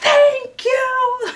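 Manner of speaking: very high-pitched, unhinged voice of a crazed woman. Retelling a woman on a crowded train answering a guy, imitating a woman going mad. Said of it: "like going mad".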